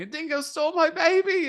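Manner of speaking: shrill, very high, loud screaming cry. Quoting a famous film line: imitating Meryl Streep screaming. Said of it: "Meryl Streep running around screaming".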